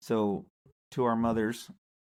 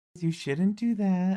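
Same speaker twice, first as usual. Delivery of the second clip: put-on young voice, much higher; 9 semitones higher, 4 dB louder than usual. Act out what your mom probably would have said, imitating mom's young voice. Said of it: "in her young voice".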